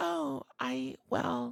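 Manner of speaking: put-on shy, awkward voice. Describing how Makoto seems on the outside: shy awkward Makoto voice. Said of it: "shy, awkward".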